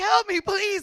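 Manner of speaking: mock scared, high, tearful crying voice. Retelling being stuck in a car as a lady asks if you're okay, imitating own crying plea. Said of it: "like crying, like so scared".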